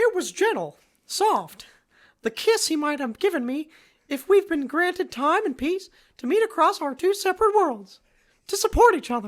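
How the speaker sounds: very high, sing-song voice. Reading a long romantic paragraph aloud in a Mickey Mouse voice. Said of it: "Mickey Mouse".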